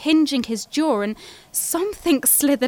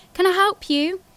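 put-on honeyed, polite retail voice, bright and pitched up; 5 semitones higher than usual. Narrator greets a customer at work in their best retail voice. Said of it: "I asked in my best retail voice".

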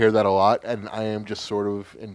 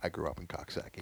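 put-on flat deadpan, much quieter; 4 semitones lower, 16 dB quieter than usual. Retelling what a girl said about her hometown, imitating her deadpan delivery. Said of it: "face is, like, deadpan and goes".

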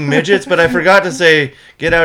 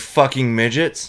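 leaning hard on 'fucking midgets'; 4 semitones lower, 6 dB quieter than usual. Retelling what the speaker yelled while grabbing a broom, stress on 'fucking midgets'. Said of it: "You put the emphasis on that".

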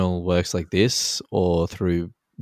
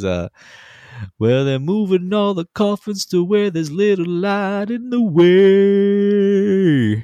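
much higher put-on Southern drawl; 13 semitones higher, 6 dB louder than usual. Quoting a man who switched into a full Southern drawl mid-story. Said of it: "he goes full like Southern drawl".

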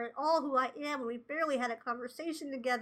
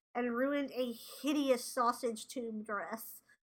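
usual speaking voice

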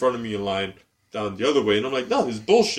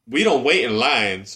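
put-on woman's voice; 4 dB louder than usual. Retelling how a woman behind them skipped the line: imitating a woman's voice. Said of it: "I did her the sound of her voice anyway".

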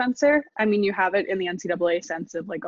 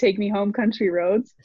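ordinary talk

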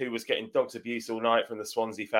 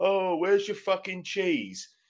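jeering, high, drawn-out shout from a distance; 9 semitones higher than usual. Retelling a Welsh bloke shouting in the distance: imitating someone shouting. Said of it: "I heard some Welsh bloke shouting out".

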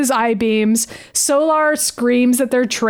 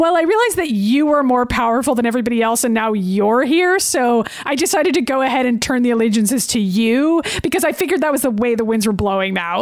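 ordinary delivery

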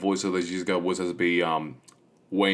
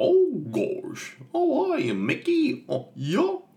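very slow, very high, swooping, wobbly cartoon voice, words stretched. Imitating Goofy as Bill Farmer voices him: Goofy voice. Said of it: "And then, like".

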